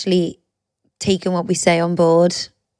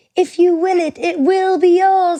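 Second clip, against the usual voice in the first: very high-pitched animated cartoon character voice; 12 semitones higher, 4 dB louder than usual. Recalling the thought in her head just before the winner was announced, in a Happy Feet voice. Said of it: "in the happy vo- happy feet voice".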